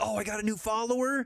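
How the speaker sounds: acted-out excited voice. Retelling a reaction to a new follower alert: imitating own excited reaction. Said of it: "I get all excited".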